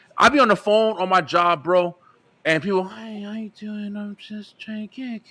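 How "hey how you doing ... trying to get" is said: very hushed, high, barely audible mumble. Retelling phone calls at work with people he can't hear: imitating a caller speaking too quietly. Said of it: "If you talking to me and I can't fucking hear you".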